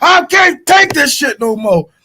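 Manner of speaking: high, slow yell. Retelling being tired and outside, retelling his own yell. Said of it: "I'm yelling like".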